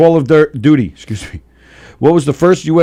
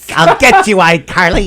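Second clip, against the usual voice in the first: put-on weird kid voice, higher pitched; 4 semitones higher than usual. Imitating a weird-voiced kid from iCarly: imitating a weird kid's voice. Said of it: "Kinda talk like this".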